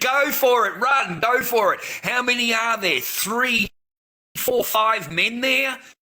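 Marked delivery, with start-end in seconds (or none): 0.0-1.8 urgent, encouraging yelled voice. Recalling watching men on a bridge on TV, retelling screaming at the TV. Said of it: "I'm screaming at him at the T V".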